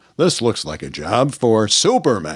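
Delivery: deep, dropped radio voice. Retelling how the radio Superman changed voice: Superman voice. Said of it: "he would change his voice when he became Superman on the radio".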